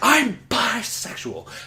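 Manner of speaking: high, loud yell, blurted out. Retelling an announcement made in a restaurant: retelling own scream. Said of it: "Screamed it to the whole frickin' Chili's".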